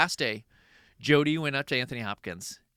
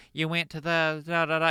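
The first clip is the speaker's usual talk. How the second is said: mocking, taunting West Virginia accent; 3 semitones higher than usual. Retelling how a co-star was mocked on set: imitating a mocked accent. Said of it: "does her accent back to her".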